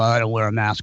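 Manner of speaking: plain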